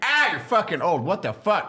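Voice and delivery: play-acted, high-pitched yelling. Retelling yelling at a general in the hatch: imitating yelling at a general. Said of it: "I would just yell at him".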